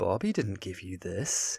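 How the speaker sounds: condescending, patronizing, belittling tone. Retelling what he says to her: imitating a condescending tone. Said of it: "he's condescending towards her as well".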